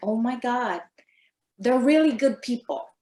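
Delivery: plain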